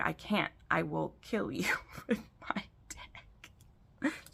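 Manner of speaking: soft, slow whisper with laughing through it. Describing a scene from a favourite book, laughing while talking. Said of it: "Sorry, I'm laughing".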